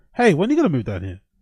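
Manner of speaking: fast, condescending, mocking tone. Retelling how the boss asked about moving, mock-condescending, mocking tone. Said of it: "in a somewhat condescending, mocking tone".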